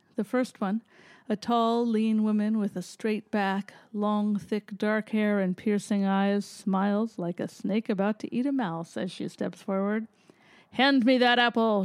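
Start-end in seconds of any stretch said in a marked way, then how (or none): 10.7-11.9 loud, booming goddess voice. Reading fiction, a tall woman steps forward toward him: booming. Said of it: "she booms".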